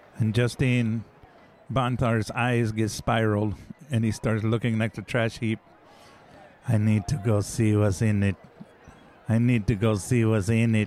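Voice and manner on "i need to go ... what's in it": mechanical robot voice in a flat monotone. Panther speaking strangely while a companion asks if he's okay, talking like a robot. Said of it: "you're weirdly talking like a robot".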